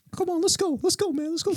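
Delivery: very high, soft-spoken, coaxing voice. Retelling a man urging another man back to his room, imitating a really high-pitched voice. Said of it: "he had a really high pitched voice".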